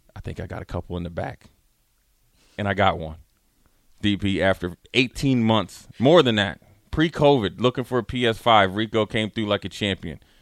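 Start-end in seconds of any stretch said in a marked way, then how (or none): 0.2-1.5 barely audible, very quiet leaned-in whisper. Retelling what someone said leaning over, imitating a whisper. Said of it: "he leans over and whispers".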